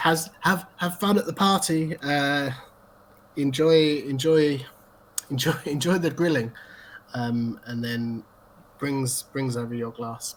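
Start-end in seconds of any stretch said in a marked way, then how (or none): 0.0-6.5 big, booming, carrying call. A character calls out across the bar in a booming voice. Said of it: "a booming voice that comes across the bar that says".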